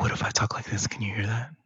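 soft, hushed ASMR-style delivery, close to the mic. Testing a new microphone on a call: soft ASMR-style voice. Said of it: "we're not gonna do an A S M R podcast".

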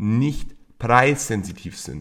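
nicht leaned on hard and said slowly.

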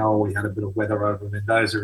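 fast, flat, laid-back, laconic, offhand pilot voice.

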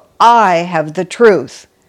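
heavy stress on "I", not on "truth". Describing how people with ego claim the truth: stress on i. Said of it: "the emphasis is on the word I rather than on the word truth".

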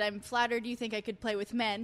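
plain

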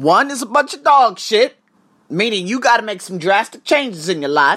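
put-on Texas-style country accent. Explaining a one-to-ten self-rating scale to listeners, in a country accent. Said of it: "I got that country accent going".

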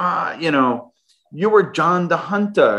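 playful put-on German accent. Retelling what a swiss german boss said: put-on german accent. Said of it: "I always play around with this German accent".

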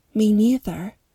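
plain reading voice

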